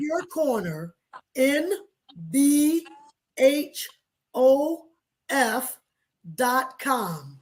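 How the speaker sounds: very slow, halting delivery, breaking mid-phrase. Repeating a web address after being asked to say it really slow: very slow. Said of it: "Say that really slow again".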